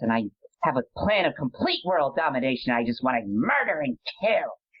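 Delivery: put-on crazed, unhinged demonic little-child voice. Speaker describes slipping into the voice, then demonstrates it: crazed demonic child voice. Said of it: "all of a sudden I'm talking like this".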